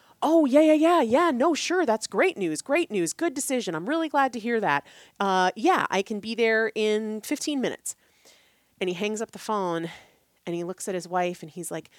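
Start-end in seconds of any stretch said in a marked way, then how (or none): 0.2-8.0 perked-up, eager, high, loud voice. Retelling a man's phone call with a client; imitating eager voice. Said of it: "He went from totally zapped to eager".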